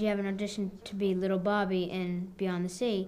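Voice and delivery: plain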